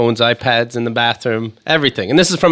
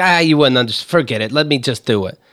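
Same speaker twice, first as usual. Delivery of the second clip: usual speaking voice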